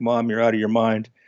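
put-on exasperated, eye-rolling tone. Retelling a son rolling his eyes at his mom: imitating an exasperated son. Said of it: "rolling his eyes like".

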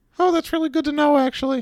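squeaky character voice pitched way up very high. Asked by the host for a best Marcel impression, trying a Marcel impression. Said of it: "Give me your best Marcel impression".

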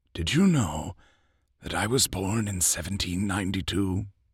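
put-on soft, weary, tired old man voice. Reading an old man's reply about his past, weary voice. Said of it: "He said in a weary voice".

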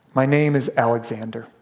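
trembling, quivering, timid, sheepish voice. Retelling a soldier's ashamed answer: imitating a quivering voice. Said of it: "with a quivering voice".

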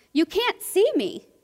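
put-on high, sudden blurted-out exclamation. Retelling a little girl talking with a blind priest after an assembly; retelling a girl's exclamation. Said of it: "she stops and exclaims".

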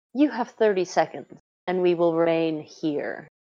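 soft, hushed words spoken on a quiet sigh. A game master voicing a woman answering after a persuasion roll, sighing softly. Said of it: "She sighs softly and says".

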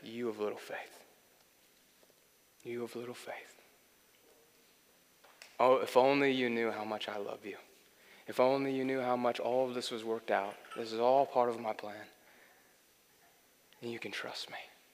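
soft, gentle, reassuring voice. Retelling what God seemed to say during prayer: imitating God's gentle, non-condemning voice. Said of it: "in the most gentle, non-condemning voice".

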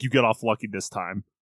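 put-on voice of a giant older man. Retelling Yami leaving Asta to join the other captains: imitating Yami. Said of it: "He's like".

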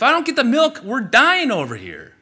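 put-on high, loud, desperate baby voice.

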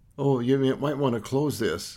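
ordinary talk

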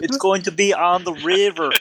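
bad put-on Austrian accent. Voicing a character who is supposed to be Austrian: bad Austrian accent. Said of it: "I have no idea what accent that is".

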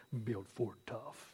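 very low, very quiet, deep commercial announcer voice. Recalling the end of a truck commercial, in a deep Ford announcer voice. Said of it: "the guy with the deep announcer voice".

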